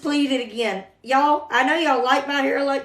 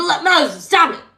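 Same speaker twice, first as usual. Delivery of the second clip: mock irritated, losing patience, a little angry; 3 semitones higher, 4 dB louder than usual. Acting out the Lord telling Moses to stop arguing: imitating an annoyed Lord. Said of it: "it even made the Lord a little ang-".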